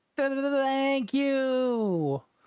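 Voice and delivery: put-on very high, very slow, stammering baby goat voice. Voicing a little baby goat that jumped out of a bag: little baby goat voice. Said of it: "It's a little baby goat. ... And he goes".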